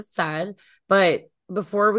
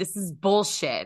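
put-on furious outburst. Retelling how they stood up and stormed out, reenacting an angry outburst. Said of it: "I was so mad".

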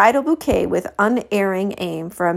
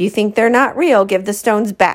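quick, rapid, commanding tone; 4 dB louder than usual. As police sirens approach, Blue gives the others an order, ordering quickly. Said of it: "Blue ordered quickly".

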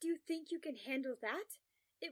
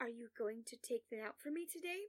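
ordinary delivery, nothing marked

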